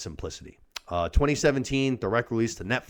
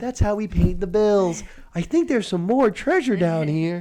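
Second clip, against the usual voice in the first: put-on little girl voice, higher and louder; 9 semitones higher, 4 dB louder than usual. Retelling a movie scene, imitating the little girl's voice. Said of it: "the tone of her voice".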